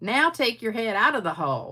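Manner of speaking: put-on hillbilly voice, hollering. Telling a joke, voicing the mother hollering back to her son, in a hillbilly voice. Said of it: "I thought that was a good hillbilly voice I used".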